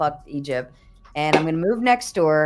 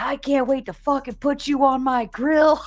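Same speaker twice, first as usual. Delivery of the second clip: very high, furious shouted voice; 9 semitones higher than usual. Retelling a video of a farmer chasing cows out of water: imitating an angry farmer yelling. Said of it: "he's still yelling".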